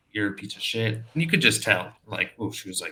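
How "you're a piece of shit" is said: ordinary talk, nothing marked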